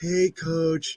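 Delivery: put-on sad, somber voice. Retelling how he'd answer the phone after a loss, imitating a sad somber voice. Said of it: "this really sad, somber voice".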